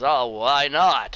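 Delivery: talking like a classic western movie cowboy. Telling a story in which John Wayne answers a kid who is fishing, use a classic John Wayne voice. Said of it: "in that classic John Wayne voice".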